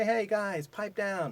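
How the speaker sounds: fun, light-hearted, friendly, playful tone. Teacher demonstrating an expression from lesson one: fun, playful tone. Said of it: "you could say it in a fun way".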